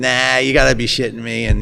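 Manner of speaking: put-on heavy Boston accent. Quoting a man's reply in a story, in a heavy boston accent. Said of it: "He's got like a heavy Boston accent".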